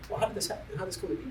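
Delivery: soft, hushed voice.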